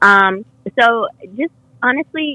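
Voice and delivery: ordinary talk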